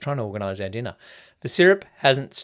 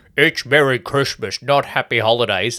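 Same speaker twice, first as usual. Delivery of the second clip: mocking, caricatured, acted-out parodying put-on voice; 3 dB louder than usual. Quoting a holiday meme the way its sharers sound: imitating meme sharers. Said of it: "and that's how they all sound".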